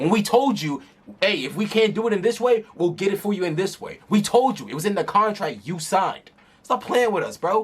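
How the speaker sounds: fed-up, heated, increasingly riled-up scolding. Arguing back about payment terms in a signed contract: getting worked up. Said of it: "I'm getting worked up".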